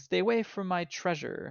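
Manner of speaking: heated, angry outburst. Narrating a game, voicing a character who starts screaming. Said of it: "he starts screaming".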